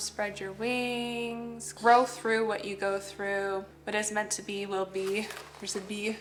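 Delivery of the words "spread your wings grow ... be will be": ordinary talk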